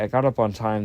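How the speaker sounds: normal talking voice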